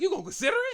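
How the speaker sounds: high, loud, outraged, disbelieving shout.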